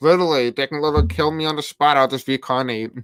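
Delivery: plain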